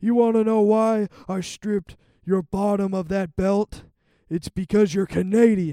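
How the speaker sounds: loud, high-pitched put-on voice, jabbing. Retelling a wrestling segment where the general manager strips the champion: Kurt Angle impression. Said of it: "I know I'm doing impressions".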